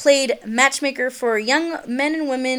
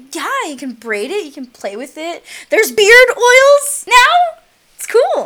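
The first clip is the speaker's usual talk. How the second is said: excited, animated gush, high and rising; 8 semitones higher, 8 dB louder than usual. Talking excitedly about beards to another speaker: voice pitch getting higher. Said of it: "why is your voice pitch getting higher?".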